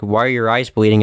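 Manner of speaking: ordinary delivery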